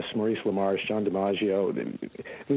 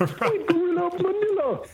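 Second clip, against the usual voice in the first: thick put-on Jamaican accent, higher pitch. Showing the lines written for the character's accent: thick Hermes Jamaican accent. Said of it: "the accent got a little thicker".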